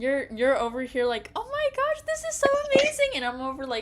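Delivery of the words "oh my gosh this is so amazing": mock very high-pitched, loud, thrilled gushing. Teasing a companion for getting excited about it, mocking someone's excited gushing. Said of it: "you're over here getting excited about it".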